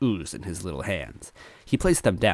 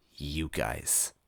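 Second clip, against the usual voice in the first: very quiet, low, hushed, grumbling growl; 4 semitones lower, 10 dB quieter than usual. A narrator reads a character's words as she wakes up, growling. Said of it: "she growled".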